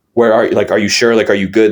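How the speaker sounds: put-on scared, panicking voice. Retelling the grandparents asking again on the call: imitating scared panicking voice. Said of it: "they were really panicking".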